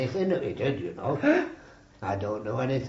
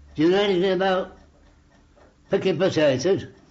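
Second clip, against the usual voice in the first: acted sarcastic delivery, high and raised pitch; 7 semitones higher, 5 dB louder than usual. Recalling being sent to Widdington, quoting the taskmaster: imitating his sarcasm.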